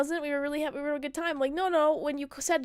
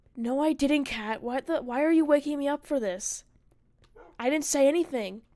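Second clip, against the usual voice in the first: combative, hostile, defensive, aggressive tone. Retelling a half-asleep partner's reply after being woken: imitating an aggressive partner. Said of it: "you were very aggressive when I, when I was talking to you".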